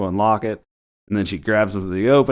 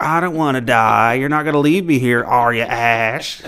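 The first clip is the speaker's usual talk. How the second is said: jeering, mocking taunt, one word drawn out; 3 semitones higher than usual. Retelling how Cheryl taunts Ash from the cellar: imitating Cheryl's mocking taunt. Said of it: "Cheryl's in the cellar mocking him".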